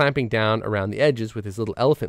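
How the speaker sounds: plain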